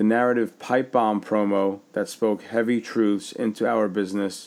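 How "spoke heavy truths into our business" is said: ordinary talk, nothing marked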